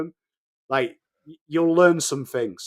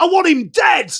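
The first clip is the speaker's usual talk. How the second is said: mock angry shout, higher and louder; 13 semitones higher, 8 dB louder than usual. Retelling a spectator yelling at a player: imitating an angry crowd shout. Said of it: "he got really angry".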